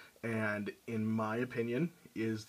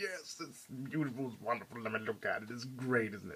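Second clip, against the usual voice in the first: gushing, giddy, over-the-moon excitement; 4 dB quieter than usual. Retelling how one gushes over a new statue: imitating excited geeking out. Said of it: "completely freaking out and geeking out".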